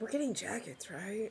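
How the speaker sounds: hushed, very quiet, barely-there half-whisper. Half-whispering in character to the party while climbing into the wagon: half-whispering. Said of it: "I'm just, like, whispering".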